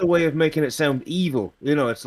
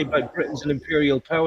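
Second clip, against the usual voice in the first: normal talking voice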